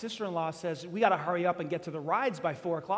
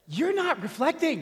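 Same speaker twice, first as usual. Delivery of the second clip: voice with an edge, raised pitch; 8 semitones higher, 4 dB louder than usual. Retelling what the speaker said back to her in the van, retelling saying it with an edge. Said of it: "I said it with kind of this edge in my voice".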